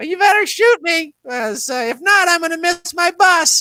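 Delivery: put-on small, very high little-old-woman voice. Retelling what a sixty-five-year-old woman told a robber, in her little old-woman voice. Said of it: "she's got a little voice like this".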